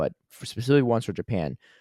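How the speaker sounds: ordinary talk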